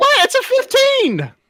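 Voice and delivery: shrill, loud, very high shouting. Reacting to a failed deception roll in a tabletop game, yelling loudly. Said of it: "I'm sorry if I'm yelling too loudly".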